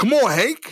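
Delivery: put-on begging, pleading voice, pitched way up high. Imitating a wildlife official talking to a bear: imitating someone pleading. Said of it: "he sounds like he's pleading with the bear".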